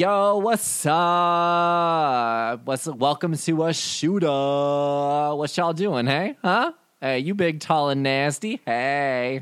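cocky, brash swagger, very slow, pitch stretched upward. Narrating, the speaker voices a halfling guard greeting the visitors, cocky and confident. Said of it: "he's got a lot of big dick energy".

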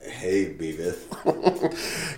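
deliberately bad put-on cartoon voice. Trading cartoon impressions with others: terrible Butthead impression. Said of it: "that's a terrible butthead".

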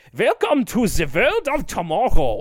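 ride-narrator voice, put-on German accent, swooping, high. Imitating a ride narrator doing a German voice. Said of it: "he is doing the German voice".

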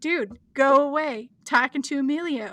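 plain

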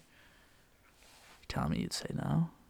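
very slow, hushed whisper. Asking the other speaker a teasing question: whispering. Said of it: "don't whisper like that".

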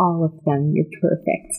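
motherly stage whisper. Voicing a mother kissing a forehead, whispering tenderly: whispering as the mother. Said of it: "she goes in to kiss your forehead and whispers".

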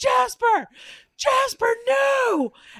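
shrill, very high, top-of-lungs scream. Telling a story about someone yelling at Jasper; imitating Mitchell screaming. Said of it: "Mitchell screaming at the jazz man, like at the top of his lungs".

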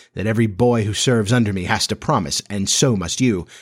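ordinary talk

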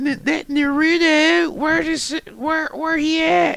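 put-on high, slow, soft, confused old man quaver.

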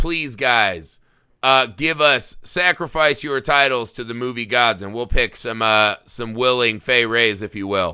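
ordinary talk, nothing marked

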